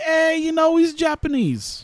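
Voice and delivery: pitched way up and dragged out. Trying to do the best possible Bill Burr impression. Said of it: "Just try to do my Bill, best Bill Burr impression".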